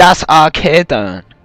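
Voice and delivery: attempted German accent. Naming the game map after joking about trying a german accent: attempted german accent. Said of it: "I'm trying to do the German accent".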